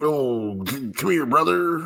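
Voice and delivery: high, called-out pro wrestler style voice. Asked by another speaker for an impersonation: Hulk Hogan impersonation. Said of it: "you do a good Hulk Hogan impersonation?".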